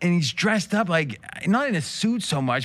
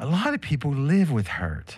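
put-on soft whispery voice. Describing a soft-spoken woman on a show, imitating her soft whispery voice. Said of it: "she's soft-spoken, right? And she's like whispery".

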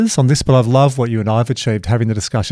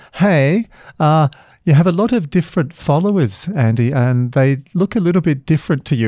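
put-on tactful, gentle, delicate South African accent; 4 semitones higher than usual. Retelling an assistant's remark at a Monday meeting: Shannon's South African accent. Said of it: "you know Shannon's lovely South African accent".

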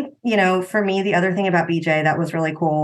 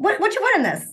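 put-on yell, much higher pitch; 14 semitones higher than usual. Recalling someone's reaction to a tomato soup family meal: retelling a yell across the restaurant. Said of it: "he's like yelling from across the restaurant".

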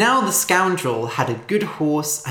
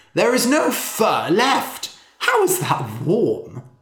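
disbelieving, doubting, incredulous tone; 2 semitones higher than usual. A storyteller reads the rich man's reply to the scoundrel, disbelieving rich man. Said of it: "The rich man was wearing a fox fur coat, / asked the rich man. / The rich man could not believe it. / but he was still shivering".

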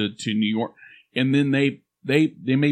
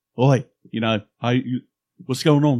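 fake television-style accent. Admitting they pick up accents from what they watch, Peaky Blinders accent. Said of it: "I'm watching Peaky Blinders. I can't help myself".

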